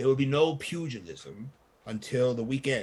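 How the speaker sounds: hushed, in-character half-whisper. Voicing a character who is asked about a fight: half-whispering in character. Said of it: "he kinda goes to a whisper".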